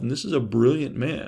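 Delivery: plain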